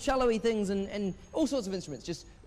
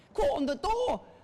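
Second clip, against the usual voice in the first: failed put-on Scottish accent, very high; 10 semitones higher than usual. Retelling the little man rattling off questions: bad Scottish accent. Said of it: "It's not even Scottish".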